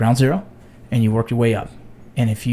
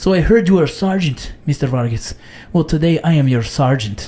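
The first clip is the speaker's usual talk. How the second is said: put-on Mexican accent drifting into French; 3 semitones higher than usual. Retelling what one of the guys said when he joined border patrol, Mexican accent that comes out French. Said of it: "You said it all French like that?".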